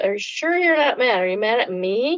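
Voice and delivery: playful, exaggerated, jokey comic voice. Retelling how the chef teased her in front of a group: imitating a comic voice. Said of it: "he said in a comic voice".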